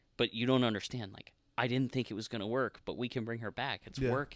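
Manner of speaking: usual speaking voice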